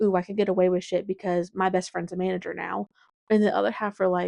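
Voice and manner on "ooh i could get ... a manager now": usual speaking voice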